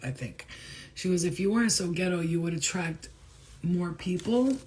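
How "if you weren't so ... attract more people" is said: usual speaking voice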